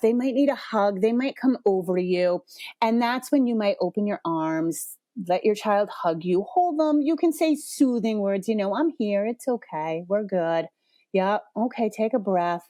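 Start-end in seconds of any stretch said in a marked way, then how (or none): 8.7-12.6 low-pitched even monotone. Demonstrating soothing words for a parent to say to their child, low even monotone. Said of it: "Monotone, kind of like low pitch, like I'm doing right now".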